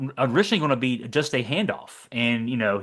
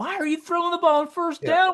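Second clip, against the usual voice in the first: put-on scream, higher. Retelling a first-down pass call two plays earlier: imitating own screaming. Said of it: "I was screaming two plays before".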